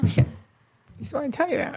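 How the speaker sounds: soft, tearful speech, crying through words. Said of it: "Why are you crying?".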